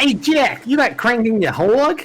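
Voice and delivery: fake New York accent, very high pitched. Joking at a game character named jack: put-on new york accent. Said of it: "Just puts on a New York accent".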